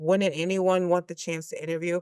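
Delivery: normal talking voice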